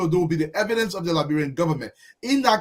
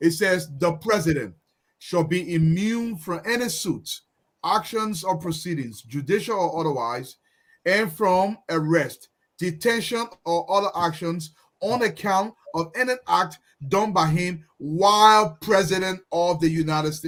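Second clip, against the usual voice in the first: very slow, deliberate reading aloud, word by word. Reading an article aloud so the audience can listen, very slowly. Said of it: "read the article very slowly".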